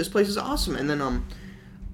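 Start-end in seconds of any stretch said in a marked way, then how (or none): 0.0-0.8 excited, high-pitched, fast gushing. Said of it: "and I was like".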